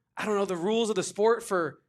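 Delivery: normal talking voice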